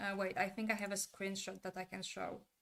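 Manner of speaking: ordinary delivery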